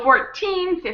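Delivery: put-on fourteen with heavy stress on 'teen'. Explaining teen numbers versus forty, fourteen stressed on teen. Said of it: "that's where the stress of the word is, on the teen".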